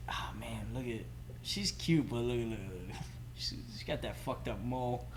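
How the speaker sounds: soft, private, muttered disparaging aside.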